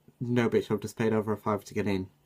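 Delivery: ordinary talk, nothing marked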